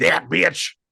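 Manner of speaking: sudden blurted-out exclamation. Acting out what he was going to say: imitating how he would say it. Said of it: "he was really gonna say".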